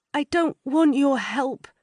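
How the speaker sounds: weak, feeble. Reading a scene aloud, a distressed woman refusing help through a door: feeble voice. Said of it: "says a feeble voice".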